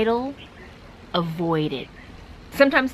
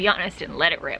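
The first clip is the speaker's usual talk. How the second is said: usual speaking voice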